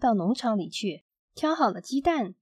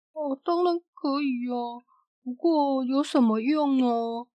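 puzzled, confused, bewildered. A farmer answers Mr. Strong, who asks to use his barn, puzzled. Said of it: "农夫疑惑地说".

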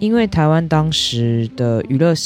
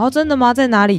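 mock excitement, much higher and faster; 11 semitones higher than usual. Retelling rushing out after her brother shouted about the tv: retelling an excited reaction. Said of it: "我超开心的冲出去".

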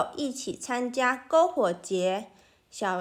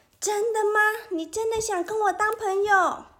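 very high, overjoyed, joyful shout; 9 semitones higher than usual. Reading a story, a little monster hears someone wants to be its friend: happy shout. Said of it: "小妖怪开心的大叫".

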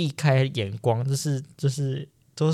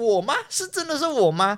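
all-out yell, very high, loud and shrill; 9 semitones higher than usual. Recounting winning a big prize draw, retelling a loud shout. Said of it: "我就真的很大声的喊说".

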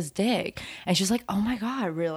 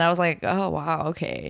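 ordinary talk, nothing marked

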